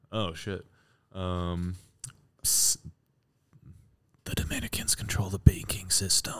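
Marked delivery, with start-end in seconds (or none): 2.4-6.4 whispering. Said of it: "you have to whisper it".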